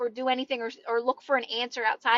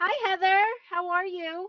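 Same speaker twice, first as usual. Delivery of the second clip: put-on voice, high-pitched; 7 semitones higher than usual. Saying hello to someone by name, in a high-pitched voice. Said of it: "I said that so high pitched".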